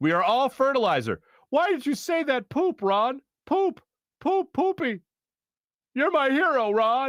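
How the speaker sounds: put-on, borrowed deadpan comedic cadence. Reading a viewer's joke lines aloud: Chris Parnell cadence. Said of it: "I hope I captured the cadence of, uh, Chris Parnell".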